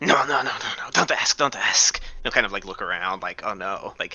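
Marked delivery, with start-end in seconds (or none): 0.0-2.0 high-pitched, put-on flustered voice. Told by a lady she could ask around, playing flustered, bad at this. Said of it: "trying to play like the I'm bad at this".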